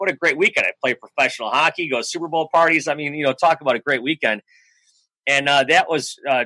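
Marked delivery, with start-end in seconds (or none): none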